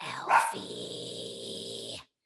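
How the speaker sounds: very low, deep, creaky, rough demon voice. Retelling a stage moment, lying face down on a bed: demon voice. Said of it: "I found this, like, like, demon voice".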